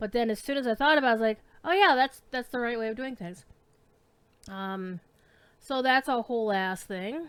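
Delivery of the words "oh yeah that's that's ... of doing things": plain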